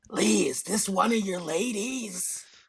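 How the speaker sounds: loud, high stage whisper. Player's character leaning toward a companion, loud whisper. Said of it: "loudly whisper".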